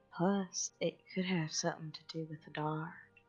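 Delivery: hushed, soft half-whisper. Speaking in character during a game scene: half-whispering. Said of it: "I'm gonna whisper".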